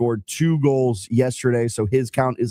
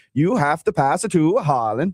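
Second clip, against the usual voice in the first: put-on Norwegian accent; 4 semitones higher than usual. Trying out a pregame speech in different accents, now a mock norwegian accent. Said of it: "Can I do a Norway accent?".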